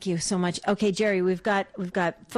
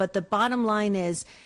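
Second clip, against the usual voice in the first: plain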